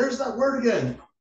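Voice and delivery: very high movie-scientist voice, pitch pushed way up. Showing what you do every time he says "heavy", do a Doc Brown impersonation. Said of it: "my Doc Brown impersonation".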